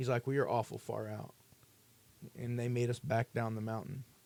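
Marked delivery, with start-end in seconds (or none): 0.2-1.3 firm, no-nonsense, stern delivery. Retelling how a man stopped them near the base: imitating someone stern. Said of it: "he was very stern".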